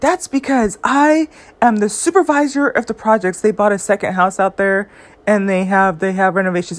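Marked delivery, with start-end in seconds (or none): 0.0-3.4 play-acted, full of pride and boastful bragging. Retelling what a man said about supervising projects, mimicking his proud tone. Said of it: "he said it with so much pride in his voice".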